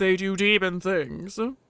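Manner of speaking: blunt, curt, grudging, few words. Playing both sides of a mock question-and-answer about demons, best Logan voice. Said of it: "you do a good Logan".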